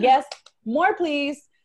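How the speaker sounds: keen, eager delivery.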